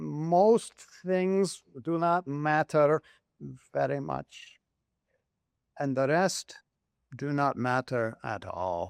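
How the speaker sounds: put-on marbly Greek accent, most drawn out. Quoting what Daskalos told his stressed father as a boy, Daskalos impression, marbly Greek accent. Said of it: "he said it in a marbly Greek accent".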